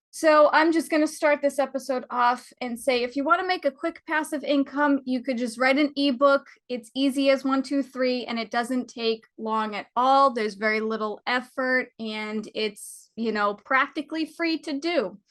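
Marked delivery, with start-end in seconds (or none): none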